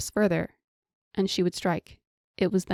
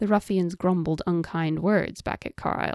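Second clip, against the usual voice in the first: ordinary delivery, nothing marked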